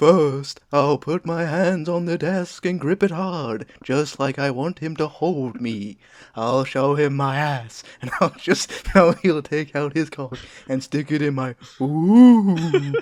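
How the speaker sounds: put-on very loud ghostly girl voice, "ooh" stretched. Asked by a co-host for an impression, the speaker reads the ghost's quote: Ghost Girl voice. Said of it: "do your best Ghost Girl impression".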